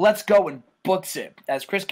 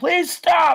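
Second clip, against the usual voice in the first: very high, pleading yell; 12 semitones higher, 4 dB louder than usual. Recounting a scene, the speaker voices a screaming man begging: retelling a pleading yell. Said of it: "he's like yelling".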